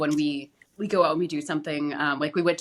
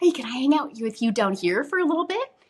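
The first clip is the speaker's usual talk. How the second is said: put-on very high, patronizing kid-talk voice; 9 semitones higher than usual. A lady kneeled on the floor to speak, imitating patronizing talk to a child. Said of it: "she kind of said it like that, as if I'm a second grader".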